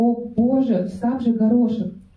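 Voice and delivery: ordinary delivery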